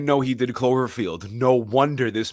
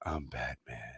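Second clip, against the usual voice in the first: hushed, quiet, sad superhero voice; 9 semitones lower, 17 dB quieter than usual. Asked for a Batman voice, imitating the sad Robert Pattinson Batman. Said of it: "Robert Pattinson is so sad. So it's just like".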